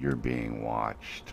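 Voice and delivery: very quiet, low, deep, hushed confidential tone. Telling the other person something not to be said too loud, real quiet. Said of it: "so I'm going to say it real quiet".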